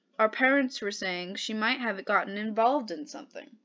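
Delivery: ordinary delivery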